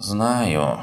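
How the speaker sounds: with a sigh. Conceding a point to the narrator in conversation, with a sigh. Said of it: "вздохнул он".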